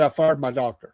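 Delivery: ordinary talk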